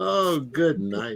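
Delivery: said through a giggle. Imitating a grandma who said it at the end of every laugh. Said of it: "My grandma used to laugh and she'd go".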